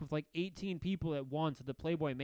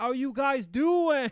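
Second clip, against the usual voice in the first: put-on yelling voice, higher and louder; 7 semitones higher, 9 dB louder than usual. Retelling New Year's Eve in the crowd, imitating Ryan Seacrest yelling. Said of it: "Ryan Seacrest is, like, yelling".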